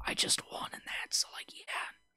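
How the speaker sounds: hushed whisper, barely voiced, under the breath. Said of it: "Why did I whisper there?".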